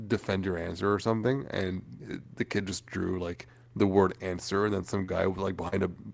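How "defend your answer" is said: usual speaking voice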